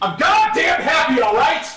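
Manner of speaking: worked-up, loud, shrill, agitated shrieking snap. Gamer on stream while others keep telling him to calm down: agitated. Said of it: "just calm down".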